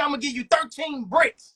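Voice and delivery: ordinary talk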